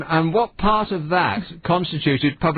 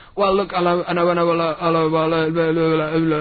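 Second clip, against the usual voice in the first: mock stumbling, halting start over words. Mocking how a man always begins his questions, imitating a stumbling questioner. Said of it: "he stumbles all the time when he's asking questions".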